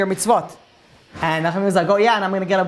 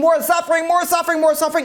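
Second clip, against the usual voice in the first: mock very high-pitched scream, repeated over and over; 10 semitones higher than usual. Telling a story of a man grabbed by angels, retelling a scream. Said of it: "he starts screaming".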